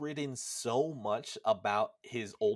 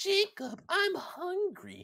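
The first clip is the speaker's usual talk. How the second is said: put-on very high, swooping young boy voice. Describing a younger brother character's voice, imitating a high-pitched voice. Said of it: "it sounds like he's intentionally high pitching it".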